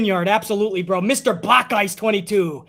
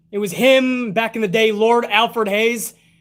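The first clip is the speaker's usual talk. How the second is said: ordinary talk, nothing marked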